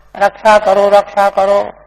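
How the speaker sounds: ordinary delivery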